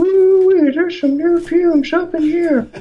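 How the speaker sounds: super high-pitched, loud voice. Retelling a man pouring paint into a bucket: super high-pitched voice. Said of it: "he just had this really super high-pitched voice, and he goes".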